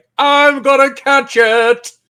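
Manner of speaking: high, slow mock heroic call.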